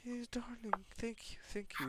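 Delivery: very high, weepy, sobbing crying voice. Retelling a story where a crying girl thanks a rescuer: imitating a girl crying. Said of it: "while she's crying like that".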